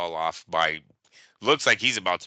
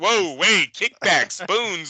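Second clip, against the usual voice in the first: put-on startled man voice, higher and louder; 12 semitones higher, 6 dB louder than usual. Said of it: "Diddy would have been like".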